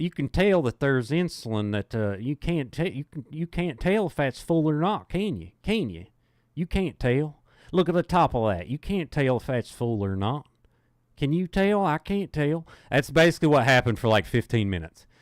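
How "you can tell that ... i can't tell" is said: put-on thick, laid-on heavy West Virginia accent. Retelling, not verbatim, what someone said: heavy west virginia accent. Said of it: "give my West Virginia accent here".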